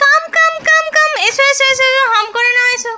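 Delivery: high, loud, coaxing voice.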